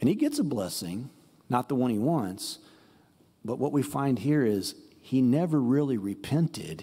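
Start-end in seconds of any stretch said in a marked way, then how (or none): none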